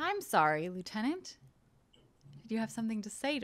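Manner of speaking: smiling, pointed voice with a smile in it. A cardassian turns back to a lieutenant who insulted him, said with a smile. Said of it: "a smile on his face and says".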